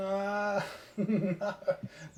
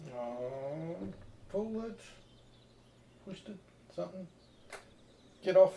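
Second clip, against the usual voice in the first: flustered, completely rattled, half-whispered, breathy scramble; 6 dB quieter than usual. Dave struggling with something while the other speaker listens; rattled. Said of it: "the sound of uh, you being rattled".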